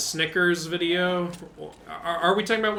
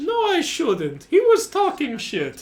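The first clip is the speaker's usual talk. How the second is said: very high, loud, swooping character voice; 11 semitones higher, 6 dB louder than usual. Doing a requested silly voice for one minute as Mario: Mario voice. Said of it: "you want to do the Mario and the Luigi?".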